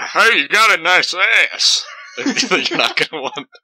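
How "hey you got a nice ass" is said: loud, high, drawn-out catcall holler. Act out a man catcalling someone, in a 40-year-old guy named Tony impression. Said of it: "perfect 40-year-old guy named Tony impression".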